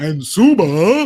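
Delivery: booming, very loud sports announcer voice. Recalling an announcer whose way of talking cracked him up, imitating the announcer. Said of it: "just the way he talked all the time like this".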